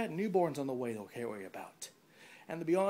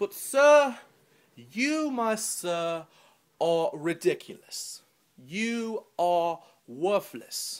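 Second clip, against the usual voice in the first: very loud, fake, bad, very British accent; 10 dB louder than usual. Addressing someone as sir, speak in a very British voice that isn't quite British. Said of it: "in a very British voice".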